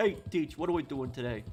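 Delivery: put-on deep New York accent. Playing a game and repeating a character's greeting, in a deeper New York accent. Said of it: "Kind of like the more deeper New York accent".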